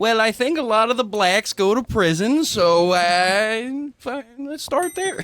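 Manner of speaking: put-on very high, slow old-man voice, drawn-out uh.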